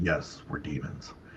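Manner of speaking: deep, low, hushed whispered demon voice. Retelling how demons answer people who ask if they are demons: deep demon voice. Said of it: "they'll say it in a deep voice".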